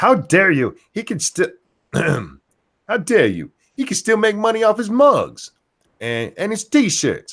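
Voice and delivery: very high, flustered, indignant outrage. Retelling an angry complaint by Carlos, imitating Carlos's voice. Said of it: "that's my voice for him".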